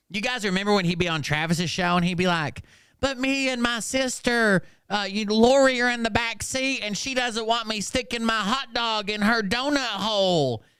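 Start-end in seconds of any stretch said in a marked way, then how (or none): 3.0-10.6 put-on high, childish voice with "hole" stretched long. Retelling how Rhino talked on a show: imitating Rhino doing a kid's voice. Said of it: "why are you doing a kid's voice".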